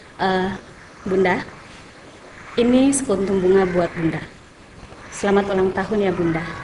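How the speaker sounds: flat, level, emotionless monotone. Acting out a husband handing his wife a flower: flat, emotionless. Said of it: "memberikannya itu tanpa emosi".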